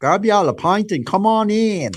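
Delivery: loud, high fake Australian accent, still sounding English. Trying an Australian accent after being told to grab a pint: put-on Australian accent. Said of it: "You sound too English".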